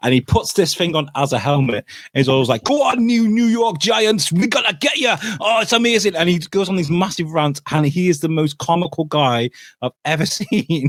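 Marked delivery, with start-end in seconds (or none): 2.6-6.1 very high, frenzied, wild Geordie rant. Describing a comical man who goes on massive rants, the speaker imitates his wild accented rant. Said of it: "it's down to the accent because he goes absolutely nuts".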